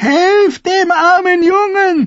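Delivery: very high, very slow, shrill, drawn-out shriek. The grandmother calls for help as the young king chokes: shrieking. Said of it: "kreischte die Dornenkönigin mit einer Stimme".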